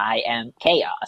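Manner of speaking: alien voice dropped very low. Asked on a podcast to say something in a nineteen forties voice, comes out as an alien voice. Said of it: "That's Alien".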